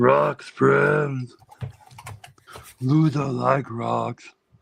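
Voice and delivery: very slow, drawn-out, rasping, creaky voice. Doing a voice that makes them want to watch Labyrinth: Ludo voice. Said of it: "Every time I do that voice".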